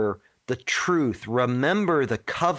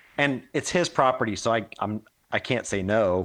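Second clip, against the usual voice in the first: ordinary delivery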